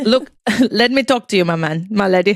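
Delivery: terrible put-on South African accent. Retelling how a woman confronted Emil over missing money, the speaker quotes his reply imitating Emil's South African accent. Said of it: "South African".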